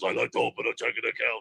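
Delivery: put-on full Russian accent. Retelling him walking into a bank to open an account, as Nikita Koloff in a Russian accent. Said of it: "in the full Russian accent he goes".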